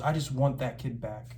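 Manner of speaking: imitated teary, tearful voice. Recounting a moment when both were crying, the speaker quotes the man; retelling someone tearing up. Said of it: "and he starts tearing up".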